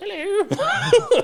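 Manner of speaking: very high, loud, squeaky, funny little voice. Describing an anime character who greets visitors: Lord Death's funny little voice. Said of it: "he's got a funny little voice".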